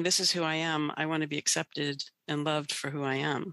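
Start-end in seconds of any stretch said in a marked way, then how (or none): none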